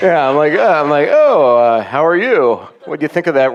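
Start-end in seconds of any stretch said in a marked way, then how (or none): 1.1-3.5 hesitant, uncomfortable, awkward, halting speech. Retelling chatting with a teammate's dad after hitting a car: retelling own awkward small talk. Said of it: "the most uncomfortable shooting the breeze".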